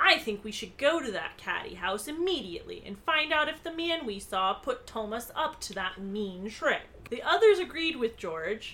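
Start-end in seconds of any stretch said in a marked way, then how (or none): none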